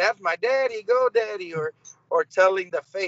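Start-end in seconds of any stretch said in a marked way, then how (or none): 0.0-1.5 high, excited cheering yell. Retelling the daughter cheering during his wrestling match: imitating daughter yelling. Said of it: "your daughter out there yelling".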